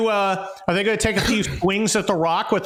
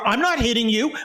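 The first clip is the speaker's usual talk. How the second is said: put-on childish little-kid voice; 3 semitones higher than usual. Imitating a little kid in the car: imitating a little kid. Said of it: "like a little kid in the car, and he's like".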